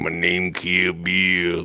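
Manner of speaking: very slow, drawn-out, low delivery. Retelling what friend Gino would say: imitating friend Gino. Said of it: "and he was just like".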